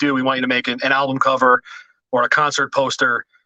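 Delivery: ordinary delivery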